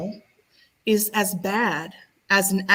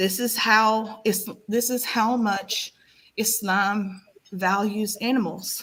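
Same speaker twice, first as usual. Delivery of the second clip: choked-up, tearful voice on the verge of crying; 2 semitones higher than usual. Addressing the audience, about to cry. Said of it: "I'm like about to cry right now".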